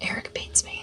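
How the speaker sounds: soft, whispered mock delivery.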